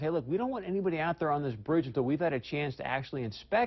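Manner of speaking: usual speaking voice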